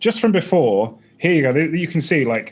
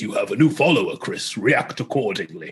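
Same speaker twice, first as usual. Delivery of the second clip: put-on deep fantasy character voice; 5 semitones lower than usual. Showing how their stream's follower alert sounds, in a Dungeons and Dragons character voice. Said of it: "he talks like this".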